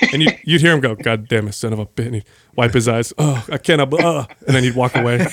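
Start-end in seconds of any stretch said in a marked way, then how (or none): 0.9-2.0 mock muttered cussing, lower and quieter. Retelling how he'd cuss at himself for crying, retelling cussing under his breath. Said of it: "He'd start cussing under his breath because he'd be pissed off that he's crying".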